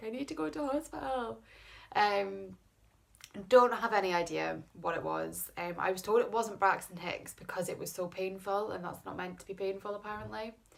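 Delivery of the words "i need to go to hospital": tearful crying voice, pitched up. Retelling phoning dad at night in pain: retelling own tearful plea. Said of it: "there was me crying".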